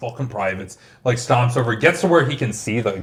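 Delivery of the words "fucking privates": put-on muttering under the breath, lower and quieter. Retelling a drill sergeant's reaction to a shot private: imitating someone muttering under his breath. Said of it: "starts, like, muttering under his breath".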